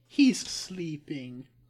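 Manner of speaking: sleeping drawn out slow, as if in air quotes. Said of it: "air quotes".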